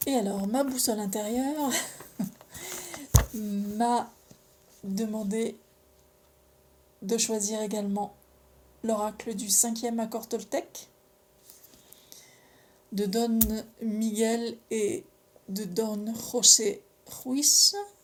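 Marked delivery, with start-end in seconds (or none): 12.9-17.7 Spanish accent, spoken slowly and loudly. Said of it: "je le fais avec l'accent".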